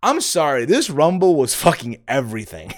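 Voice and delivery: sarcastic, tongue-in-cheek gushing with swooping pitch. Reviewing the men's Rumble match for viewers: sarcastic praise. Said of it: "I'm being sarcastic when I say that shit".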